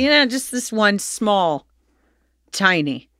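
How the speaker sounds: slow, nonchalant, offhand tone. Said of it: "you just said it so nonchalantly".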